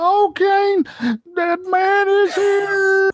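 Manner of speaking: shrill, very loud, very high belting yell. Doing a requested impression for the co-hosts: Paul Bearer impression. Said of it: "give us the Paul Bearer".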